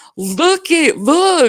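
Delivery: mock very high, insistent, urgent shout. Retelling yelling at her husband, who stared at the dashboard, retelling a yell. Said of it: "And I'm like yelling at him".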